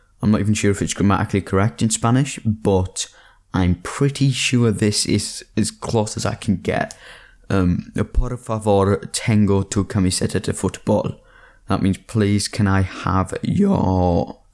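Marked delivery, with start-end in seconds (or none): 12.0-14.3 voice cracks, slower. Translating a Spanish phrase into English, with a voice crack. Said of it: "I just had a voice crack".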